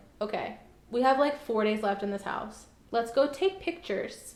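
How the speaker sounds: plain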